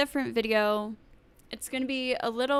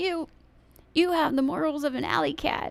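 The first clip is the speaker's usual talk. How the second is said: put-on very old man voice, pitched up; 5 semitones higher than usual. Retelling a debate moment, imitating Biden's super old man voice. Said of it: "in his, like, super old, old man voice".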